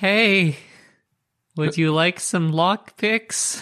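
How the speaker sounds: awkward, sheepish tone. Playing Tess, handing lockpicks back to Lustra, sheepish Tess voice. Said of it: "Tess is going to sheepishly".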